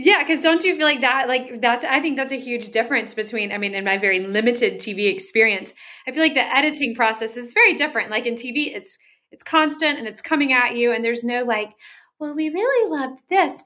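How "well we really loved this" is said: soft, gentle, raised-pitch voice. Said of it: "I love your editor voice".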